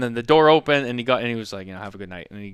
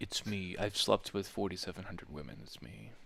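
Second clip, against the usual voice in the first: calm radio-style voice, lower and quieter; 4 semitones lower, 20 dB quieter than usual. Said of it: "his perfect [name] N P R voice".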